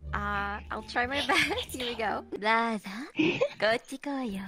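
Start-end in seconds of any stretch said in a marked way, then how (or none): 2.3-4.4 anime-style dubbed character voice. Trying a little anime voice acting for friends who watch anime. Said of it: "I can do a little voice acting on some".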